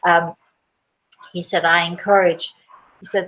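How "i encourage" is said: usual speaking voice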